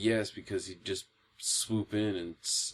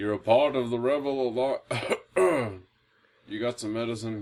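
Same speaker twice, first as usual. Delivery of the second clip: put-on elderly villain voice, higher and louder; 3 semitones higher, 6 dB louder than usual. Joking about an aged villain in a new film: old Darth Vader voice. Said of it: "It's gonna sound like an old Vader".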